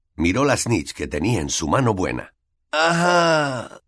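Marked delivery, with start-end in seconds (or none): 2.7-3.6 feeble, weak, high little cry with no strength. Narrating a boy in great pain looking at the Snitch in his hand, weakly. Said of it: "dijo sin fuerzas".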